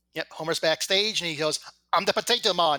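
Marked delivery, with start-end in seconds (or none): 2.0-2.8 bad put-on Irish accent, louder. Retelling Homer backstage introducing himself, in a really bad Irish accent. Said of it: "in a really bad Irish accent".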